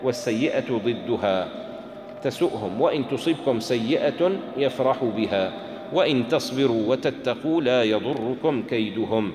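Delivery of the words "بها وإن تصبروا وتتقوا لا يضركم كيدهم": ordinary talk, nothing marked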